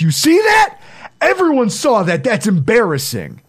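far-up, wildly swinging, swooping high scream. Retelling a player screaming at teammates while running off the field: imitating someone screaming. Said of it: "he's screaming at his teammates".

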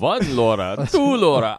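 loud, swooping vampire count voice. Reacting to a question about a new comic, doing a Count von Count voice. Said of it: "the count from Sesame Street going".

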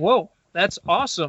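ordinary talk

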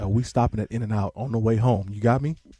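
hushed whisper. Speaker reenacts what he says into her ear, whispering in her ear. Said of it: "I'm definitely whispering in her ear".

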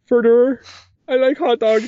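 put-on voice pushed very high in pitch. Reading out a listener's name, impersonating Leonardo DiCaprio from What's Eating Gilbert Grape. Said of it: "impersonating the guy from What's, uh, Leonardo DiCaprio from What's Eating Gilbert Grape".

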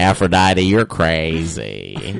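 saucy, lazy Southern gentleman drawl. Improv bit riffing on Clash of the Titans, Southern dandy voice. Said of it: "Now he's become like a southern dandy kind of".

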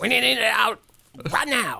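slow, creaky, drawling voice. Voicing a producer rushing out a Jaws-like movie: impression of Edward L. Montero. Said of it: "doing an impeccable impersonation of Edward L. Montero".

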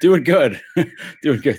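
words broken by laughter. Answering how they're doing as a car alarm goes off: laughing while talking. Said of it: "I'm laughing because there's a car alarm".

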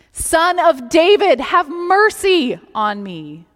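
very loud, high, drawn-out crying out. Retelling the beggar crying out again over the crowd: imitating someone shouting louder. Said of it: "He shouts even louder".

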